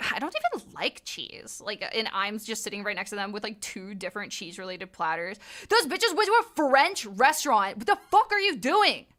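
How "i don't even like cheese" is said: slow, hushed, whispered mutter under the breath. Retelling what ladies at a French restaurant said: imitating someone muttering under their breath. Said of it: "under their breath".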